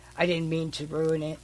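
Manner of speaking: ordinary talk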